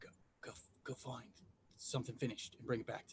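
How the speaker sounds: quiet whispering. Retelling whispering to a pet badger during a conversation: quiet whisper. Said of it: "I whisper to my badger, like quietly".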